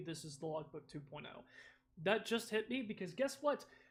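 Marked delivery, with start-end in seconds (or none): 0.0-1.4 softer, hushed, serious tone. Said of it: "Like, legitimately".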